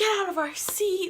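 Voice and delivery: mock rude, aggressive, high, nasty shouted yell. Retelling how a couple started yelling at them: imitating someone yelling. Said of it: "start yelling at us".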